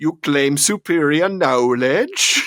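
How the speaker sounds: put-on over-the-top, thick comedy German accent. Quoting a character's line to a scientist: Tryst's comedy German accent. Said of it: "just off the charts as a comedy accent".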